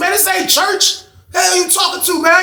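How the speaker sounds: put-on high, snapping, very loud yell. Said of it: "I'm loud as hell in the pod".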